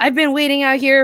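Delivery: furious, high, angry yelling. Retelling how a man waiting in a car yelled over the phone, retelling his yelling. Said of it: "he started yelling at me like".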